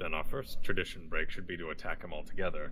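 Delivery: muttered under breath. In a role-play game, speaking a character's line muttered under breath. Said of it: "I'll say that under my breath".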